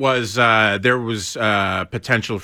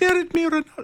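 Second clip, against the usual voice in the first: mock very high, elevated shout. Imitating a fan calling to a star on a balcony: imitating Joy yelling Ronaldo. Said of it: "it was elevating the voice".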